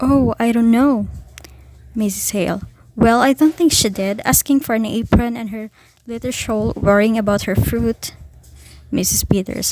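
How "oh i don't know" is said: scared, fearful, frightened voice. Reading a story aloud, one woman answering another, in a frightened voice. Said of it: "in a frightened voice".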